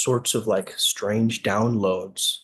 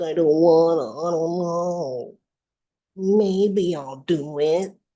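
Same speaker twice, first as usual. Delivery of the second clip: high, slow, whiny little voice, "know" drawn out; 7 semitones higher than usual. Describing an inner voice that gets overridden, imitating a tiny whining voice. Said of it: "that tiny little whining voice".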